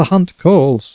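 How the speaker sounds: poor, mocking, high, unconvincing falsetto. Narrator reads a character mimicking a departed woman's words, in an unconvincing falsetto. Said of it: "he said in an unconvincing falsetto".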